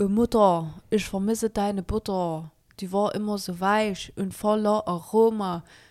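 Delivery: German Saxon dialect delivery. Speaker introduces their new character for TikTok, Laura Vuitton Saxon accent. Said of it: "Laura Vuitton kann auch richtig gut auf Sächsisch".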